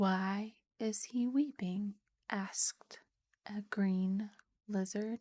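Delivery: ordinary delivery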